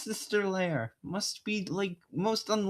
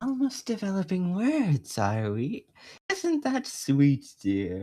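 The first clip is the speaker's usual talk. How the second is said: put-on sinister manager voice; 3 dB louder than usual. Voicing the manager Flair to the other player: sinister Flair voice. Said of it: "a sinister manager like Flair would be".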